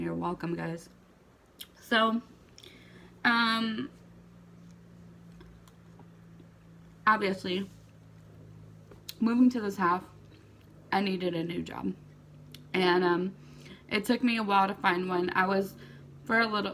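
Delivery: speaking through a mouthful, mouth full. Addressing the audience mid-story, talking with a mouthful of ice cream. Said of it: "I'm just gonna talk with a mouthful of ice cream".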